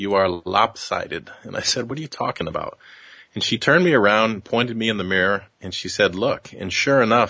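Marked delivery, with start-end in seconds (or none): 0.0-1.3 put-on thick European accent, slower. Retelling what the tailor said to the speaker: thick European accent. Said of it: "in a very thick European accent".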